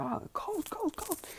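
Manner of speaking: very high, soft, whining whimper. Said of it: "but he's like".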